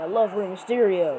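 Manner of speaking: usual speaking voice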